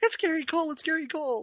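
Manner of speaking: mock, very high-pitched, starstruck, excited gushing. Retelling how a woman spotted an actor nearby, imitating someone getting excited. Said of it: "she's like getting all excited".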